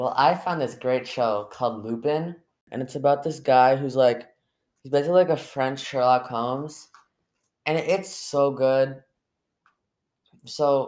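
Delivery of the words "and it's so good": slow, awkward, reluctant and forced-sounding. Recommending a show to another speaker, sounding forced. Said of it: "You sounded like you were, like, forced to say that".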